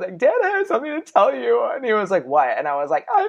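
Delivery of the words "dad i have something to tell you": mock tearful, very high-pitched sobbing. Retelling coming out to their dad on the phone, retelling own sobbing. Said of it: "and I was sobbing".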